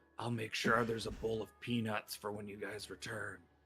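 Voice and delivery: very soft, hushed half-whisper. Voicing a king who leans in to a player character: half-whispering in character. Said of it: "he leans in and whispers to Brother Nero".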